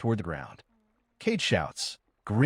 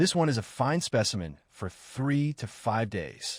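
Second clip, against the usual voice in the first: normal talking voice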